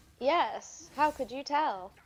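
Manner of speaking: heavy, really sarcastic tone, high and drawn-out. Answering another speaker's guess: really sarcastic tone. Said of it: "that sounded really sarcastic".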